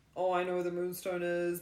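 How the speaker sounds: ordinary talk, nothing marked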